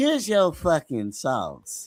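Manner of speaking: horrible, bad, fake, put-on Southern accent. Retelling what a man said, in a horrible southern impression. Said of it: "That's it's a horrible Southern impression".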